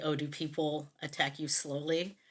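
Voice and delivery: ordinary delivery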